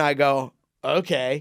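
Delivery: ordinary talk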